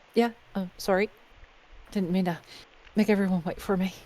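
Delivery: tearful voice, just cried, trying to sound fine. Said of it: "still kinda wiping her face a bit".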